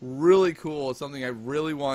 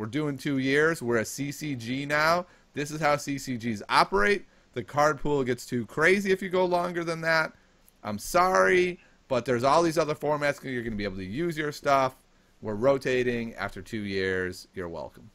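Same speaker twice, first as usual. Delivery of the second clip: plain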